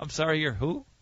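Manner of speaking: talking while cracking up, laughing through words. Asking a guest to repeat who he claims to be: laughing while talking. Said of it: "you're laughing at me".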